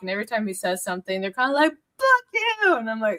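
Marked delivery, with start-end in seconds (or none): 1.7-2.8 mock angry shout, very high pitched. Retelling members yelling at a speaker at the podium: imitating members yelling. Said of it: "screaming and yelling at each other".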